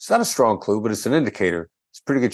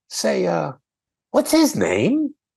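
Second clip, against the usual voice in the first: put-on very high, swooping, friendly inquiring tone; 11 semitones higher than usual. Retelling how the detective with him asked a man's name, imitating an inquiring, friendly tone. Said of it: "this inquiring, friendly tone".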